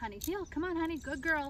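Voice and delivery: chipper, upbeat, high, encouraging voice. Demonstrating how she urges her along with her voice, chipper and encouraging. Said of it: "my voice is really chipper".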